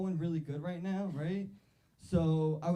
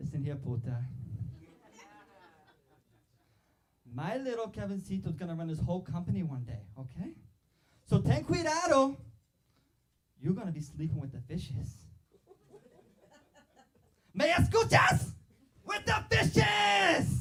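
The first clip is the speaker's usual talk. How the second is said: mock outrage, furious, swooping and rising pitch; 2 semitones higher than usual. Acting out how his mom would react to a rejecting interviewer: imitating his angry Puerto Rican mom. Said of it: "this is how my mom would react".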